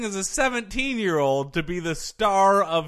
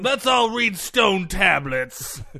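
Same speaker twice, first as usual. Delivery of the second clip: put-on grouchy, crotchety, cranky old curmudgeon voice; 3 semitones higher, 3 dB louder than usual. Doing an impression of Joel as an old curmudgeon: imitating Joel. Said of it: "That's my Joel impression".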